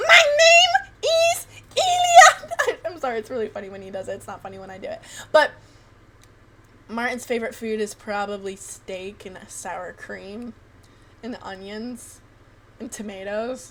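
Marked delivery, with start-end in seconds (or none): 0.0-2.8 put-on very high, very loud, shrill, booming, slow, drawn-out grandpa voice. Retelling a friend's impression of his grandpa introducing himself, imitating Elia's high-pitched voice. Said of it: "a hearing problem and a really high pitched voice".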